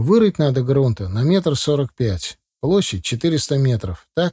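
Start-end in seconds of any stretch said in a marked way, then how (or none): none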